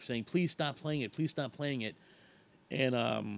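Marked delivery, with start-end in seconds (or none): none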